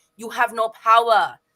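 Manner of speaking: put-on Cuban accent. Recounting what Morrell said during the fight, Morrell's Cuban accent. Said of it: "in his Cuban voice".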